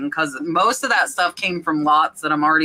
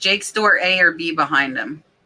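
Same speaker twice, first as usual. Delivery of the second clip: plain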